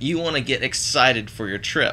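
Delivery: ordinary talk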